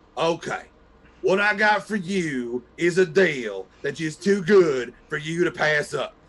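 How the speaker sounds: put-on late-night TV salesman voice. Retelling a late-night shopping channel knife pitch, imitating a TV knife salesman. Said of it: "he would go".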